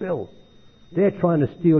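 put-on very angry, upset, worked-up voice. Retelling a friend's phone call about a stolen movie: imitating Ed angry and upset. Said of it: "He's very, very angry".

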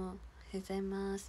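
subdued, mumbled delivery.

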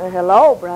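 loaded tone with a hidden undertone. Showing how a greeting can carry a hidden spirit: said in a loaded way. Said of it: "they could say it in such a way".

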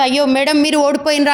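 plain

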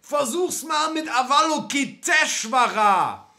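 very high, shrill, drawn-out, bellowing shout. A tramp on a passing meteor shouts over to Alexander; yelling. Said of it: "brüllte ein Penner".

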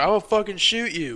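put-on shouting. Retelling a threat yelled across a store parking lot: imitating someone yelling a threat. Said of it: "He yelled that shit".

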